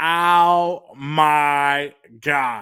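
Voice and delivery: long, drawn-out, milked my. Reacting to a surprise reveal in a final scene: Janice from Friends voice. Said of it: "like Janice from Friends".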